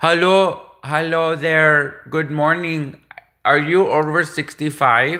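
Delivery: put-on Indian accent, put on. Retelling what a man said when he phoned the speaker, indian accent. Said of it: "I can do an Indian".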